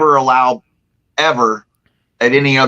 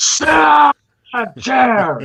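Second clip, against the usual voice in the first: very high, loud, booming bellow; 11 semitones higher than usual. Retelling someone in the academy ordering a chair: imitating a booming voice. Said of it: "with that booming voice going".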